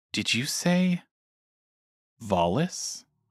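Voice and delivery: whispered speech. Voicing a character who kneels by a fallen man: whisper. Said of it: "and whispers to him".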